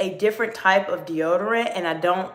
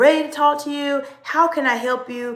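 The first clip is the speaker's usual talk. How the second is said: a touch more excited, raised, pitched-up voice; 5 semitones higher than usual. Speaker demonstrating how to elevate tone in a sensitive conversation, elevated, more excited voice. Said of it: "So I sound a little bit a little bit more excited".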